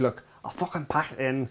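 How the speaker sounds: put-on breathy whisper in a Scottish accent. Retelling a chat between Fergie and Mourinho: Fergie impression, Scottish accent.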